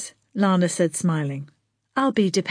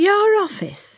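mocking lilt, pitched very high; 12 semitones higher, 3 dB louder than usual. A woman answers a newcomer who asked to be shown her office, mocking. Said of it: "she said mockingly".

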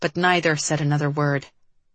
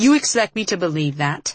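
ordinary delivery

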